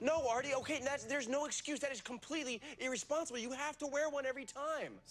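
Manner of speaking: heated indignant anger. Confronting Artie while Blaine listens, yelling. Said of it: "Stop yelling".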